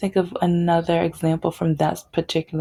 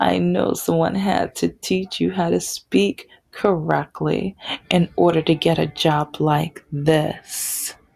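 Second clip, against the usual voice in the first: plain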